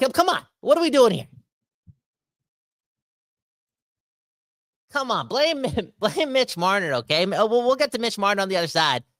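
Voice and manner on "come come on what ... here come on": fed-up, heated, mad, pitched-up, swooping voice. A Canadian fan venting to the audience, mad. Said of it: "but I'm just mad".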